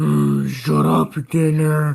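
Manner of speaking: groaning while asleep, sleepy half-asleep groan. A character mutters while still very much asleep: sleepy groan. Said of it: "you can kind of hear Scooby groan, still very much asleep".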